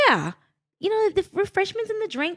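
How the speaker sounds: put-on sing-song English accent, very high. Retelling a retreat conversation, quoting a woman in a put-on English accent. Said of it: "is that your English accent?".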